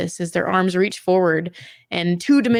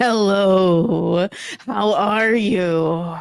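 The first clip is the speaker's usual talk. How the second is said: monster voice with "you" stretched out. Voicing the beholder as it answers a greeting, booming voice in your head. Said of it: "You hear the booming voice in your head".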